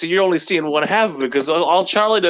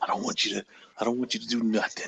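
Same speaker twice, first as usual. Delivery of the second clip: put-on grave voice, mock-serious, lower and quieter; 8 semitones lower, 11 dB quieter than usual. Speaker repeats Jordan's line back to the group, imitating Jordan's dead-serious tone. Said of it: "He sounds so fucking serious".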